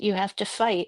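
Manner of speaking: ordinary delivery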